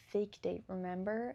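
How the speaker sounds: usual speaking voice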